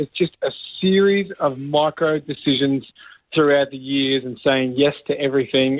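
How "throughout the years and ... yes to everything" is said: ordinary talk, nothing marked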